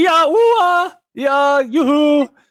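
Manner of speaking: very high, very slow, loud, drawn-out yelling. A character yells so another character can hear him: yelling. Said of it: "That's why I'm yelling".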